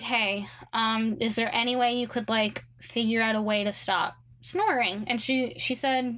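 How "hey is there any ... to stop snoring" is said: ordinary talk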